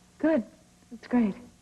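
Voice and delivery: unenthusiastic, not very excited. Answering a plan to sail for the weekend: not very excited. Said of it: "You don't sound very excited".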